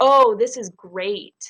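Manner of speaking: slow sarcastic drawl. Example of what someone upset about a pool party might say: sarcastic. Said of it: "like with that sarcastic tone".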